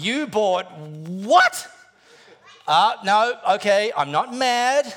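disappointed, let-down parent voice. Voicing what your money would say to you: disappointed parent voice. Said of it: "the voice sounds a little bit like a disappointed parent".

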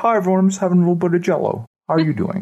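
play-acted quick, high talk through stuffed mouth. Speaker acts out a TV hospital patient greeting friends, imitating talking with mouth full. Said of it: "Because their mouth's full of Jell-O".

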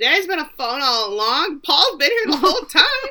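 excited, high, loud outburst blurted with laughter.

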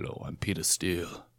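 hushed, very soft, breathy whisper. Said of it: "that's better".

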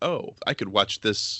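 ordinary delivery

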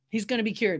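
plain

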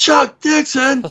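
very high, wound-up, bursting with energy. Retelling a first meeting at the office: energetic imitation of Mark Texiera. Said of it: "he's like this ball of energy".

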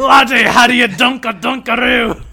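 exaggerated put-on Scottish accent. Redoing the commercial line on purpose with an exaggerated scottish accent. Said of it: "that was, like, Scottish".

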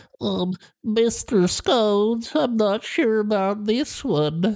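put-on high, tiny little baby boy voice. Sitting back while the Macabarista serves, speaking as a tiny baby boy voice. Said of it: "a tiny baby boy".

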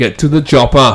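bad put-on tough-guy action-hero accent, half Scandinavian. Doing an Arnie line, admitting it sounds off: bad Arnie impression. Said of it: "probably Scandinavian".

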